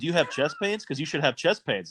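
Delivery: ordinary delivery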